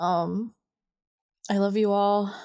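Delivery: on the edge of crying, holding back tears. Signing off a last episode to listeners, the speaker is holding back tears. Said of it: "I'm trying not to cry".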